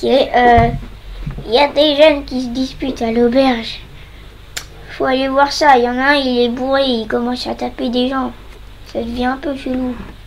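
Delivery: put-on loud elderly old man voice. Asked by another player during the game to do it, speaking in an old man voice. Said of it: "tu t'arriverais à nous faire la voie de vieux".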